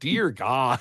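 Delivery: put-on Midwestern accent, extra "a" drawn into "dear god". Recalling first reading an album title: midwestern accent on dear god. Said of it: "My Midwestern accent came out ... I threw an extra A in there".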